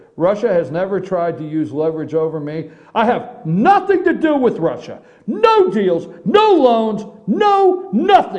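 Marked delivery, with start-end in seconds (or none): 3.0-8.4 mock loud, ranting yell with swooping pitch. Reading out his all-caps statement, Donald Trump impression, mock-yelling. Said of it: "let me do it Donald Trump style".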